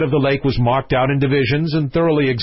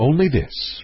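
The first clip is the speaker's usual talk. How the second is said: ordinary delivery, nothing marked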